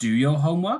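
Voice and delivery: question-like rise at the end on "homework". Explaining intonation, showing how a command sounds strange with a rising intonation. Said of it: "If it was a rising intonation".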